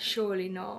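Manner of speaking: plain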